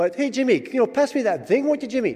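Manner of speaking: put-on Irish or Scottish accent. Describing a family joke at home, calling someone Jimmy in a put-on Irish-Scottish accent. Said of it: "went back and forth between Irish and Scottish".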